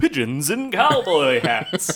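slow news announcer delivery. Announcing the next news story as a joke: announcer voice. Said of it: "let me do the announcer voice".

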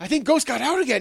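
acted, very high, loud, frantic panicked cry. Retelling telling someone the dog got out again: retelling own panicked words.

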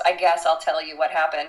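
put-on dismissive delivery. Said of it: "it was very dismissively".

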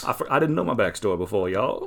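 put-on Texas accent. Mocking a movie vampire who suddenly has a new backstory, in a mock texas accent. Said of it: "I'm going to have myself a Texas accent".

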